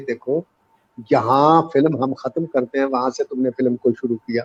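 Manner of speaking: usual speaking voice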